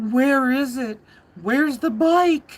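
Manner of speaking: put-on trembling, shaky, whiny, high cry. Retelling how Barry arrived on site and cried out; imitating Barry's shaky, whiny cry. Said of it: "in a very shaky, whiny voice cries out".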